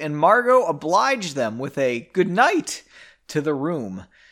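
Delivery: cracked voice, breaking and cracking weirdly. Reading a book passage aloud, voice cracking. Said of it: "My voice cracked real weird reading that".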